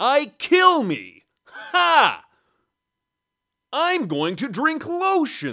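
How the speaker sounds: loud, high, very slow, drawn-out, swooping character voice. Showing that a good impression can say anything: ALF voice. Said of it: "say anything as that character".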